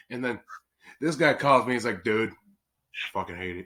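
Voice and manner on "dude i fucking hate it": put-on slow, flat, bone-dry deadpan. Retelling a phone call from the other speaker: imitating someone deadpan. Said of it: "Just straight up deadpan".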